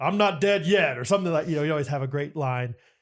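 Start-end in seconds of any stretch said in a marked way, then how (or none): 0.0-1.0 big, resounding, booming voice. Retelling a friend's line as the Christ figure in a skit: booming voice. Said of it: "pretty booming voice whenever he did it".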